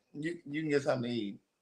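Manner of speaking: low, very quiet mumble under the breath. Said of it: "So he kinda mumbled".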